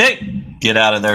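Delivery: sudden, abrupt yelling. Live show host shouting at something to get out of there; yelling. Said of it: "Sorry for yelling".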